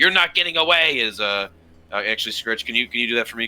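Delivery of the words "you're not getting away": pitched-up, loud yelled shout. Game narrator voices Scritch shouting at somebody amid commotion, Scritch shouting. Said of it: "Scritch kind of shouting at somebody".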